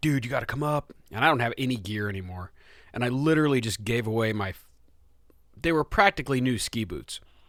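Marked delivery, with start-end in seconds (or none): 0.0-0.9 put-on excited, stoked voice. Retelling a friend's invitation to go skiing: imitating someone stoked. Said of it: "Dave's stoked".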